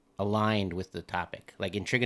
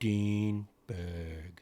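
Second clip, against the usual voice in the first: put-on announcer voice; 4 dB quieter than usual. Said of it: "you said that like you won a prize".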